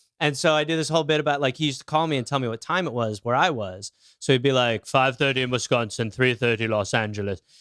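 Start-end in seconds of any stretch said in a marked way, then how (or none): 4.9-7.4 put-on, odd, caramelly South African accent. Retelling a comedy bit about a man who phoned with the time: caramelly South African accent. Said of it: "like caramelly South African".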